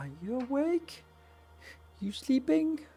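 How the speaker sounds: quiet cat voice. Voicing the kitty standing outside the speaker's door, very quiet Speedy voice. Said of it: "Like very quietly like".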